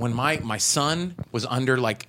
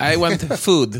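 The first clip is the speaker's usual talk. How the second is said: loud, simple, broken English; 4 semitones higher, 6 dB louder than usual. Describing a little girl's way of talking, imitating her broken English. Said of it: "she sounds like an immigrant".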